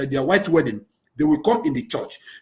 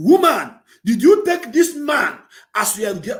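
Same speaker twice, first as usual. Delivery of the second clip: high-pitched voice climbing upward in pitch; 6 semitones higher than usual. Speaker reading wedding vows asks the woman her answer, voice going up. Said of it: "my voice is going up again".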